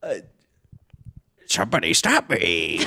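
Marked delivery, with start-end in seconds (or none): 1.5-2.8 comic put-on talking-butt voice. Performing a bit in which the butt speaks: Ace Ventura talking-butt impression. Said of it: "Are you doing another Ace Ventura impression?".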